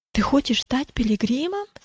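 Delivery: ordinary delivery, nothing marked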